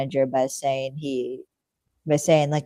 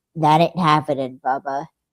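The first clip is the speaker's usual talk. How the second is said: growly tough-guy voice, growled out; 3 dB louder than usual. Retelling a show scene where Elliot gets hit: Elliot's growly voice. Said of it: "in his best growly voice".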